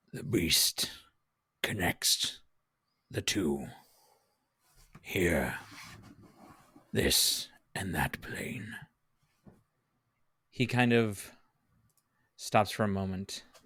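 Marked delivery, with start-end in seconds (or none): 0.1-8.7 low, gravelly, breathy whisper. Recounting what he says next in the story: low, gravelly voice. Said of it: "in this low, gravelly voice".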